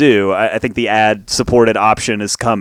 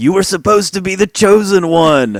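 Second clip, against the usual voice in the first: very high, full-throated, reproachful yell; 10 semitones higher than usual. Recalling a movie scene, the speaker acts out Obi-Wan yelling at Anakin: retelling Obi-Wan's yell. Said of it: "he yells at him like".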